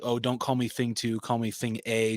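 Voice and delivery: ordinary talk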